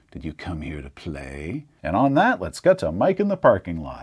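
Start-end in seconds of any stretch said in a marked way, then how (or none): 0.2-1.7 purring breathy whisper, lower and quieter. Voicing an unseen figure behind a player: breathy purring voice. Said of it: "breathy voice purrs into your ear".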